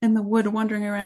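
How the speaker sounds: plain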